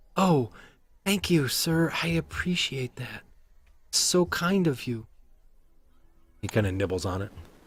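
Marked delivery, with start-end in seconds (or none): 0.1-5.0 put-on high, slow, small street kid voice. Voicing a street urchin thanking for food: street urchin kid voice. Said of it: "a street urchin, a small kid".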